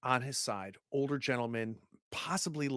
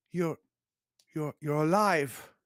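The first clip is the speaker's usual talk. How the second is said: put-on heavy Hungarian accent, laid on thick; 2 semitones higher, 5 dB louder than usual. Storyteller voicing a man as the player unties him, in a very thick hungarian accent. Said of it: "in a very, very thick Hungarian accent".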